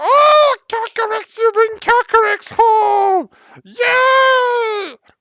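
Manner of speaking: shrill, excited, high, loud cheer, drawn-out yay. Voicing Meepo greeting the group who bring the dragon: excited Meepo voice. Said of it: "Meepo is excited. He claps his hands".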